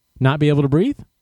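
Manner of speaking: plain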